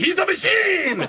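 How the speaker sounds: very high, slow, stretched-out laughing cry.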